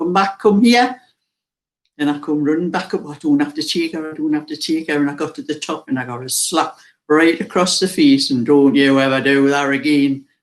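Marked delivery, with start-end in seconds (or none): 0.0-1.0 mock, very loud shouting. Retelling a childhood story, the speaker quotes their dad calling them back: retelling dad's loud shout. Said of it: "shouted at me with a very loud voice".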